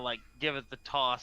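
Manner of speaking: ordinary talk, nothing marked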